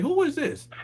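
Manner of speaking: startled, high-pitched. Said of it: "I'm like".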